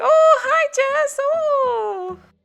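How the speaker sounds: super sweet, very high, very slow voice. Retelling a coworker greeting someone: Aisha impression. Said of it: "That's my impersonation of Aisha".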